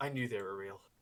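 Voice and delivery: quiet whisper. Voicing a character sitting on a throne at the scene's end: whispering to himself. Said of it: "just whispers to himself".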